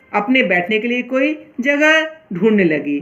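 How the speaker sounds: ordinary delivery, nothing marked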